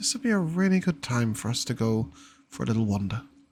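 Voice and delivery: soft, quiet, low-key voice. Narrating a scene, a voice speaks to Alex as the group heads to the tavern, quietly. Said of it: "you will hear a quiet voice that just says".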